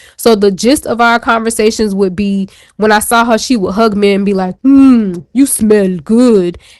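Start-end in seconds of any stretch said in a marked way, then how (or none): 4.6-6.6 slow, put-on Russian accent on every word. Retelling how a woman greeted the speaker with a hug; imitating a Russian accent. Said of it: "but she sounds Russian".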